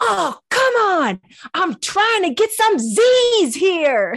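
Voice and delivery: very high, very loud, drawn-out lisping yell. Retelling a boy protesting being called to prayers: imitating Parker yelling. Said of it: "Parker yells out".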